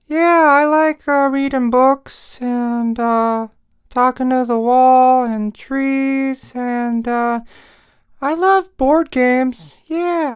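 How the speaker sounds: put-on high, cool, easygoing ghost voice. A ghost character talks about himself; ghost character voice. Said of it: "I'm a pretty uh cool kind of ghost".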